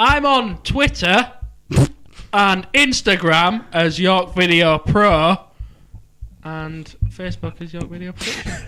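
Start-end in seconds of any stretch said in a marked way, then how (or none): 0.0-5.4 clear, loud, pitched-up, announced-out delivery. Repeating a plug said earlier in a hushed voice, now louder. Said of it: "Fine, I'll do it louder".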